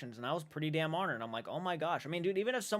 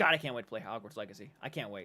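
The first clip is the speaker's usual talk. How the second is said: plain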